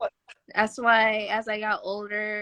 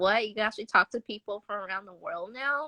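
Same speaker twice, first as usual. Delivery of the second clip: plain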